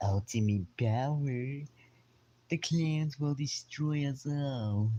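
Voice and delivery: high, loud, slow, drawn-out cartoon voice. Showing off his practiced voice impressions, speaker does a Billy from Billy and Mandy voice. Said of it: "voice impressions of, of Billy from Billy and Mandy".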